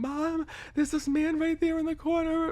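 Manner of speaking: mock frantic tearful plea, very high. Retelling calling to mom about a man in the corner: imitating own crying plea. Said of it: "being out of my mind crying".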